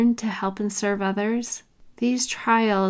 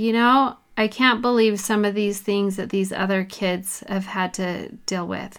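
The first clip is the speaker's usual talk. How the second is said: ordinary talk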